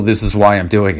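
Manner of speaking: play-acted, tearful, choked-up voice catching with tears. Retelling a speech by Mitt Romney: imitating Mitt Romney choked up and tearful. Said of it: "a choked up, like, like, tearful".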